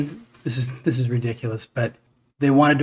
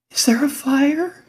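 frightened, very high-pitched, slow and drawn-out voice; 13 semitones higher than usual. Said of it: "In that [name] voice".

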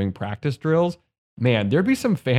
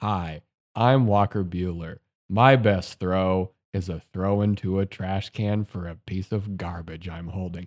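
put-on, uncaring, couldn't-care-less read; 4 semitones lower, 3 dB quieter than usual. Imitating an athlete reading anti-littering ad copy: imitating Walker Buehler's indifferent script read. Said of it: "reading a piece of copy in the most, "I don't care".

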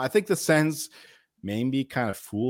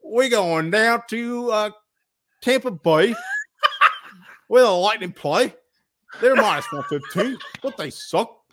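put-on Australian accent; 8 semitones higher, 5 dB louder than usual. Giving a tampa bay lightning pick in a put-on australian accent. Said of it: "I got to walk in an Australian accent".

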